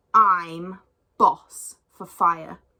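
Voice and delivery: very loud, very slow growl through clenched teeth. Narrating a story where a character refuses fire to begging animals, growled through teeth. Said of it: "he growled through his teeth".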